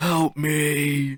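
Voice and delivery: acted, high wailing scream, the word me drawn out. Speaker retells seeing a man in the street, imitating a man screaming. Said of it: "the man just starts screaming like".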